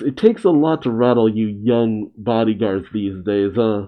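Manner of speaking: plain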